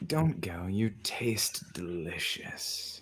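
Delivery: quiet, close-up speech. A game master voices her squeezing the player's character tightly, said into their ear. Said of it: "she says in your ear".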